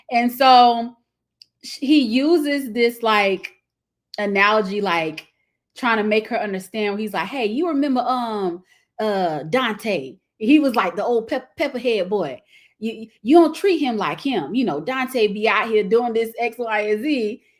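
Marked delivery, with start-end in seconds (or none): 7.2-17.3 put-on country accent. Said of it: "my rendition of his accent".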